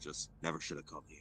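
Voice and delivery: grunting under breath. Player speaking as their character after a sentry's light passes, grunting under breath. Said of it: "I grunt to myself under my breath".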